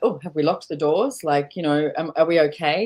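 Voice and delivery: ordinary talk, nothing marked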